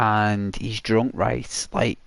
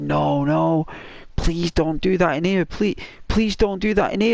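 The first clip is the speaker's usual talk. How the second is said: high-pitched screaming woman's voice; 8 semitones higher than usual. Retelling a film scene where a woman begs a man: imitating a woman screaming. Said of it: "she's screaming".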